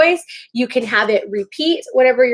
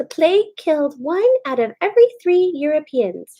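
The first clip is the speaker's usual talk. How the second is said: small, high put-on puppet voice; 5 semitones higher than usual. Showing how a puppet answers a question: little puppet voice. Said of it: "you give him a little voice".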